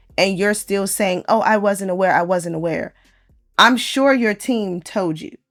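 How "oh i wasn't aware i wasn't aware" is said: ordinary delivery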